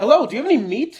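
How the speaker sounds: perky talking bird character voice, high and loud. Voicing a bird that speaks after a ritual spell: talking bird character. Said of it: "the bird says".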